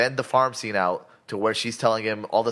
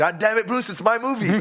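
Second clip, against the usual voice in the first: shrieking outburst, very high pitch, screaming; 11 semitones higher than usual. Describing a meme to co-hosts, retelling Superman's scream. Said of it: "he's screaming".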